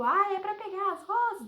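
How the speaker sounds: loud, drawn-out calling shout. Recounting the story, the speaker re-enacts shouting a question to him. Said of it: "eu gritei assim".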